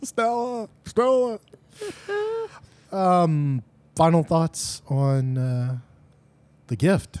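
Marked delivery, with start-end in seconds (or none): 0.0-1.4 high, mock, drawn-out calling out. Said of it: "Streetcar Named Desire".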